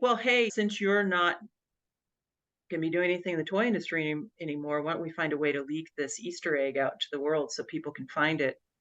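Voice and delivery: ordinary talk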